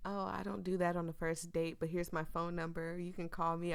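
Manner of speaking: ordinary delivery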